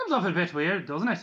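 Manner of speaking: clumsy, poorly done Irish accent. Speaker demonstrates the accent from their recordings, bad Irish accent. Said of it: "it's a bit like this".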